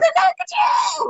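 very high, shrill, loud scream. Retelling what a son shouted near the tent: imitating a loud scream. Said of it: "really loud".

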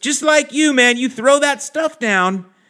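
very high-pitched, down-to-earth dude voice. Retelling what a neighbor said after a weekend away: imitating neighbor Mike. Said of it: "I'm kinda imitating him".

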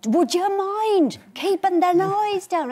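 very angry, high, drawn-out shouting. Retelling yelling at people lifting weights: retelling an angry Father Jack-style yell. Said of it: "I yell at them".

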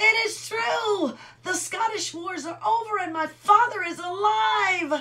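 very high, loud cheering shout. Narrating Robin bursting into a cheer as the company arrives, shouting. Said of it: "he shouted".

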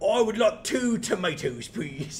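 high goblin voice trying to sound human. Pitching a game idea, voicing a goblin posing as a person, goblin pretending to be human. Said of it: "a very goblin trying to pretend to be a person".

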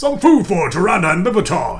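hearty, loud, booming bellowed voice. Narrator reads a man calling for food for two arrivals: bellowing. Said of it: "he bellows".

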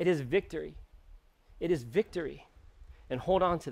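preacher voice overcome with feeling, emotional and moved. A preacher addressing listeners, preaching to self as well, getting emotional. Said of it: "I'm getting emotional".

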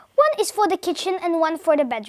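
plain reading voice

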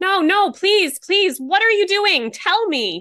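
very high-pitched, begging, pleading scream. A narrator reads the woman on a recording pleading with a man: screaming, begging. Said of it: "Followed by the woman screaming again".

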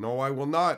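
very loud, high-pitched, flat-out shouting yell. Retelling a confrontation at the store, the speaker re-enacts how they yelled. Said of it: "I yelled".

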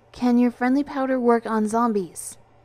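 pressing, urgent plea. The narrator puts a question to the group, urgent. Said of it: "I asked urgently".

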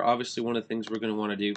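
fast, rushed speech. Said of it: "sorry I'm talking fast".

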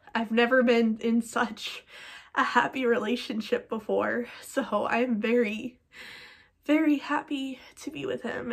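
tearful voice, crying through the words. Speaking about a partner, crying while talking. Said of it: "it may not seem like it because I'm crying".

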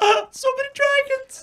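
put-on excited fan voice. Imagining a character watching a dragon fight: imitating Sarkhan fangirling. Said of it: "fangirling out".

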